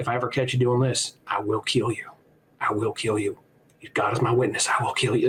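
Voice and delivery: mock threatening, menacing tone, repeated. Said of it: "giving him a menacing look and calls him the F slur and says something like".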